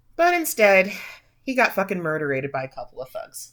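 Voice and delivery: disappointed, let-down delivery. Recounting a story to another speaker, disappointed. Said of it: "You just sound disappointed".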